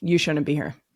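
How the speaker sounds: put-on flat deadpan. Retelling what a woman on the mountain said: imitating a deadpan delivery. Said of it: "With a dead, like, dead face".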